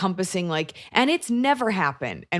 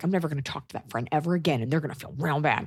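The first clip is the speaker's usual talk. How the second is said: mock angry voice, lower and quieter; 4 semitones lower, 4 dB quieter than usual. Acting out a mad girl's vow never to call again: imitating someone angry. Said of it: "you're mad".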